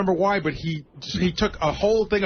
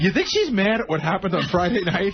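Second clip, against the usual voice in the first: mock earnest, guileless, innocent voice. Retelling a story, quoting Sal's question: imitating Sal asking innocently. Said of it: "he looks at me so innocently and so genuine".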